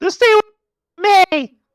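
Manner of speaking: put-on very high, very loud, very slow, shrill teen whine. Mocking a storyline character as any teenage girl on a show, mock whiny teenage girl. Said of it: "any teenage girl on my Sweet 16".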